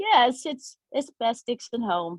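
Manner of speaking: very small, high little mouse voice. Retelling how a woman answered about her Instagram account, tiny mouse voice. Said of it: "it's in very small little mouse voice".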